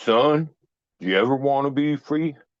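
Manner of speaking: put-on thick, strong southern Louisiana accent. Retelling what a man at a desk said after pounding it: strong Southern accent. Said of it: "the most southern accent or Louisiana accent I ever heard".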